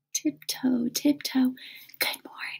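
hushed, soft, breathy whisper. Showing the class a tiptoe hello, whispering a greeting. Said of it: "and whisper, "Good morning," as you tiptoe".

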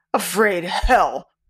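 words growled out. Hoyne, asked by the doctor if he is afraid, answers with a growl. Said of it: "growled Hoyne".

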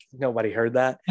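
normal talking voice

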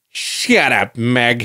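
dumb, dopey cartoon dad voice. Showing off a second one-line cartoon impression, doing a Peter Griffin impression. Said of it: "As Peter Griffin".

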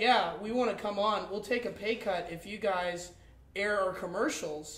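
ordinary talk

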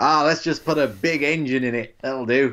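bad put-on American accent drifting into Australian. Discussing a robot with a co-host, mimicking Americans in a bad American accent. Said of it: "that was the worst American impression".

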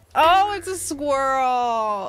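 laughing through the words, slow and amused. Finding out who Sally is in the game: laughing.

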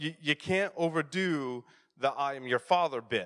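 plain

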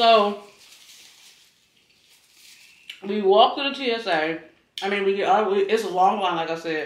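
talking while chewing, mouth full. Telling about walking to the TSA line, talking with mouth full. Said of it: "talk with your mouth full".

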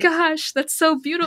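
excited, gushing, high-pitched mild mock shout. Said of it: "I was, like, shouting".

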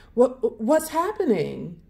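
stuttered speech. Beauty, watching the beast shake and sway before her, stuttered. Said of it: "she stuttered".

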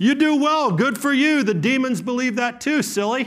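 mocking, very sarcastic, very high-pitched. Preacher voicing the scripture's words to a believer, retelling a sarcastic jab. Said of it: "Very sarcastic".

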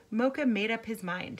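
ordinary delivery, nothing marked

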